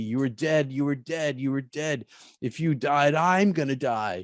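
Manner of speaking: play-acted male crying out, screaming through tears, sobbing. Recounting coming to with Tim screaming at them; imitating Tim screaming and crying. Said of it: "And he's screaming at me".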